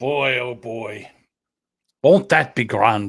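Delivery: playful, joking, fake Irish accent. Riffing on a promised haircut reward, joking Irish accent. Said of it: "I'm doing an Irish accent".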